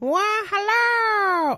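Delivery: very high, weird, silly put-on voice, drawn-out "hello". Podcast co-host answers the host's greeting at the show's start in an odd put-on voice. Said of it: "I don't know why I did that voice".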